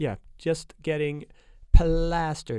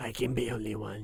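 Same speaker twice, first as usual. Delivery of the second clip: raspy put-on voice, lower and quieter; 3 semitones lower, 8 dB quieter than usual. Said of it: "that's his voice throughout the movie".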